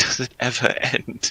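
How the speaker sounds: breathy, tearful, hushed mutter. Voicing Maria, who mutters to Brakmar: tearful mutter. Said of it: "just sort of in tears, just goes towards Brakmar and mutters to him".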